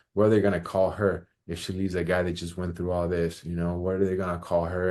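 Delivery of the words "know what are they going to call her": ordinary talk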